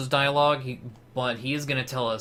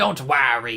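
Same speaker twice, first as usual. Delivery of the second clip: louder, sneering put-on character voice. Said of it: "Let's give him Waluigi voice".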